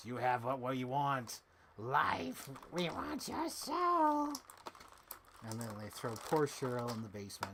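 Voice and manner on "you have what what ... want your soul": possessed demonic voice, slow and swooping. Retelling a scene where a possessed woman turns around, demon voice. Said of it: "she starts having the demon voice".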